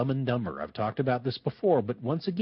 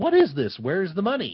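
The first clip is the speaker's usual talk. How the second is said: high, loud, booming, angry bellow; 5 semitones higher, 5 dB louder than usual. Telling the story, the speaker acts out the kidnapper opening the suitcase, retelling a bellow. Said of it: "he bellows".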